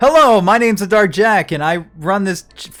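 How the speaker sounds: very loud, high, energetic, pumped-up delivery. Redoing a show intro after being asked to try again: more energy. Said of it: "try that again with more energy".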